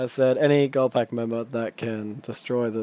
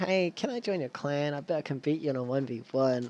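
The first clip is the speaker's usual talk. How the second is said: put-on soft, teeny, tiny little voice; 3 semitones higher, 6 dB quieter than usual. Retelling a player asking to join the clan: imitating a tiny little voice. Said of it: "She has a tiny little voice".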